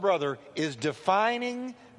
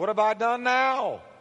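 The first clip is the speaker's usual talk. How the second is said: put-on little boy voice; 3 semitones higher than usual. Acting out David answering his older brother: little brother voice. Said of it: "You can hear a little brother in there".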